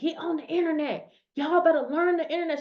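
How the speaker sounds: going off, fired-up, full preacher's pulpit rant. Retelling a pastor's video message: imitating someone ranting. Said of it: "She was going off".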